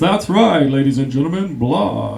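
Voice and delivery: loud announcer-style commentary voice. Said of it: "with a commentary in a voice like this".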